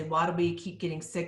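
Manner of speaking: ordinary talk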